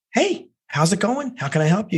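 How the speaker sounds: warm, friendly tone. Answering someone ringing in, as if it were your boss: warm friendly tone. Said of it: "that kind of friendly tone".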